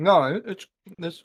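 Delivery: slow, loud, stumbling speech through a full mouth. Answering another speaker with a mouth full of potato chips. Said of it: "I got a bunch of potato chips in my mouth".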